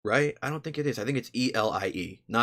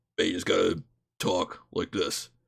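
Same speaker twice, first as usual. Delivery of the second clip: voice dropped right down, really deep; 3 semitones lower than usual. Showing how a voice from an earlier stream goes: really deep voice. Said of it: "it's just really deep".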